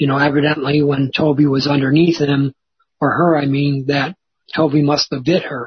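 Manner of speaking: plain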